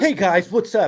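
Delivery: mock overeager, pumped-up, try-hard football coach voice. Imitating a co-host's show opening, mocking an overeager greeting. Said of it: "You almost sound like Eric Stonestreet from Modern Family trying too hard to be a football coach".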